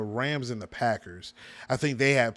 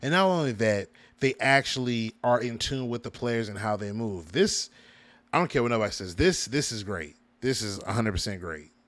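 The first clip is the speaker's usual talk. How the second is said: usual speaking voice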